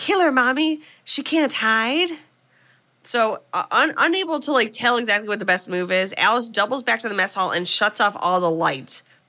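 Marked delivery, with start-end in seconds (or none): 0.0-2.1 put-on high-pitched small boy voice. Retelling a film scene where Mrs. Voorhees stalks Alice through the camp; Jason voice. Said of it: "in her Jason voice saying".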